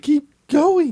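high-pitched mock announcer voice. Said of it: "They say".

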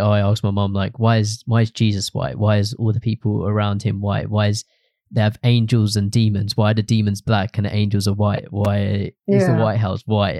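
ordinary delivery

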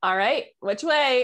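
snarky, sassy voice. Speaker retells asking spirit which way to go, retelling sarcastic, sassy tone. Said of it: "being kind of sarcastic and sassy".

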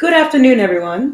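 very loud, slight put-on British accent. Greeting everyone as the intro, slight put-on British accent. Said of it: "did it a little of an accent today".

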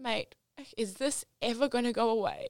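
crying out, tearful and pleading. Retelling lying on the floor asking a friend: retelling a crying plea. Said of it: "crying to Benny, going".

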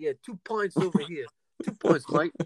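put-on vague, uncertain Brooklyn, Boston or Irish accent. Acting out what you want him to say, in a put-on brooklyn, boston or irish accent. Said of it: "I don't know if that was a Brooklyn accent, a Boston accent, or an Irish accent".

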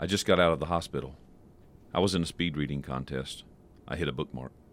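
very low, soft, hushed delivery. After clearing the nasal passages for an impersonation, tell jokes in a Steven Wright impersonation. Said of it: "that was Stephen Wright".

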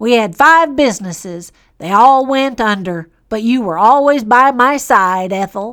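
put-on old farmer accent. Speaking to a loved one and looking back over the hard years they went through together, in an old farmer accent. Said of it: "Do you like my farmer accent?".

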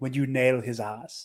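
put-on British accent. Repeating another speaker's words with delight: imitating a british accent. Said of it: "a British accent going".

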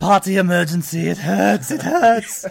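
very loud, high, zany cartoon voice. Quoting a cartoon character after others discuss his voice: Wakko voice. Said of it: "Wakko was the one that I knew immediately".

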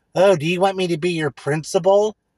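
mocking douchey guy voice. Retelling what a guy said while mocking him, in a mocking douchey voice. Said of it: "using his douchey voice".

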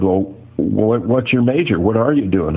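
plain

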